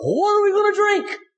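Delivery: put-on high yelling.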